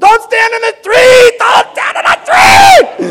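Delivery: several voices yelling, high-pitched and loud.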